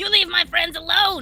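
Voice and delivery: high-pitched screaming. A player's character defends his friends mid-fight, screaming in Goblin. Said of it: "he screams out in Goblin".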